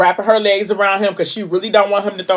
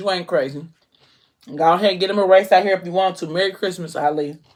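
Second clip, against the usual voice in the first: normal talking voice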